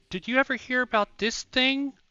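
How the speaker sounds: very high-pitched fake girly voice. Speaker quoting a person from their Discord, in a put-on girl voice. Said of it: "I'm using a girl voice".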